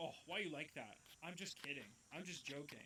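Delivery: mocking, dismissive put-on voice. Acting out how he answers when a boundary is pushed back: imitating him dismissively. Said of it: "And he's going".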